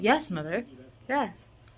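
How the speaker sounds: plain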